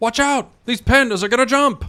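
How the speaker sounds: very high, loud, squeaky, silly put-on character voice. Warning that the pandas will jump, in a put-on impression voice. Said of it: "that's an impression of I don't know what".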